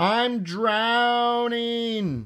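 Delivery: very high, panicked crying out. A narrator reads Froggy crying out to his mother after landing in the pond. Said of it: "cried Froggy".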